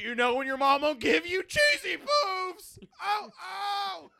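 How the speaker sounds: very high-pitched cartoon mashup voice. Joking with friends in a mashed-up voice: Sam Kinison Cartman voice. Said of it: "Sam Kinison Cartman".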